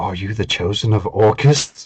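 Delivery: secretive, low half-whisper up close. Voicing a character who puts a hand on a player's shoulder: half-whispering in their ear. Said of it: "kind of whispers in your ear".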